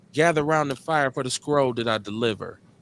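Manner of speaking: normal talking voice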